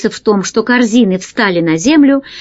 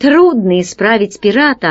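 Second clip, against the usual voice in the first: ordinary delivery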